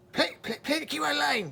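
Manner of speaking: very high, frustrated, upset shouting. Imitating a frustrated woman yelling at her Amazon device, mock upset yelling. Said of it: "like she's all upset and yelling".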